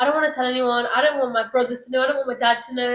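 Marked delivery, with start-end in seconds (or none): none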